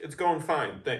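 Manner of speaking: put-on angry voice. Retelling a wrestling segment, imitating an angry Adam Pearce. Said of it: "Pierce is pissed".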